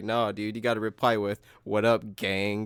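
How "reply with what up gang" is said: normal talking voice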